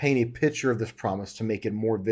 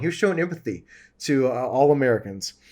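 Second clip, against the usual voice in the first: ordinary talk, nothing marked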